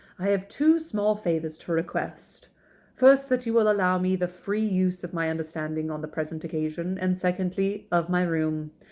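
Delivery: ordinary delivery, nothing marked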